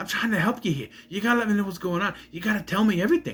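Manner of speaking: put-on over-the-top Boston accent. Mocking another actor as a copy of the same voice: Mark Wahlberg impression. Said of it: "a ripoff of, of Mark Wahlberg".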